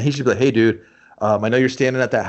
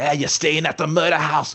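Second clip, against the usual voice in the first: put-on local Welsh accent, higher pitch; 4 semitones higher than usual. Imitating dirty welsh kids with chains and rotten fruit taunting a guest. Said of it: "dirty Welsh kids with chains and rotten fruit going".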